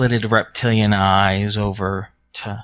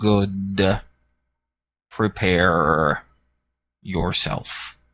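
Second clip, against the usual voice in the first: rumbling voice ringing out from afar, "good" stretched out. Voicing Tyrath answering over a mind link: rumbling voice. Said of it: "you hear his rumbling voice ring out".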